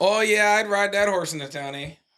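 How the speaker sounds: put-on, laid-on Upper Midwest Minnesota accent. Attempting accents from a northern state: Minnesota accent. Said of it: "I'm doing more Minnesota or like Wisconsin".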